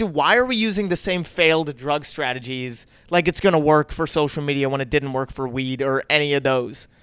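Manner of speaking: ordinary talk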